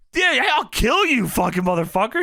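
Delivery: mock unhinged, crazed outburst. Retelling how Lauren reacted, acting out her crazed outburst. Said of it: "She stands up crazy".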